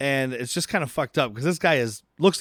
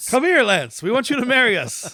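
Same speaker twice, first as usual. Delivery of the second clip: imitated yell, higher and louder; 9 semitones higher, 4 dB louder than usual. Imitating the way he's always yelling: yelling John Lithgow impression. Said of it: "I just do yelling".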